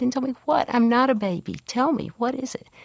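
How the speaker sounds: put-on high, tearful, wailing little-girl screech. Retelling own childhood outburst in the kitchen: imitating a screaming, crying little girl. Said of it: "just screamed, screeched, and cried and said".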